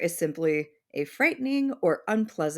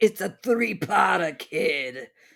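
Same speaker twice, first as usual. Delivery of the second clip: put-on Italian mob boss voice. Showing how an italian mob boss would say it. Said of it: "When you said Italian mob boss".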